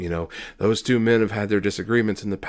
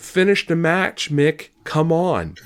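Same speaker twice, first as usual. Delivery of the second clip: play-acted, high-pitched, urging yell; 8 semitones higher than usual. Retelling what another fan screamed: imitating a fan screaming.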